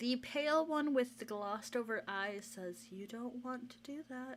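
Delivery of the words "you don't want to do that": nice, pleasant character voice, quieter. Narrating for the pale one with glossed over eyes, nice character voice. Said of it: "one is the nice one".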